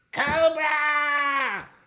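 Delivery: shrill, drawn-out screeching scream. Describing the cartoon voice the movie is missing, doing a Cobra Commander scream. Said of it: "that shrill, high-pitched voice screaming".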